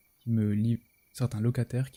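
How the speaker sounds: plain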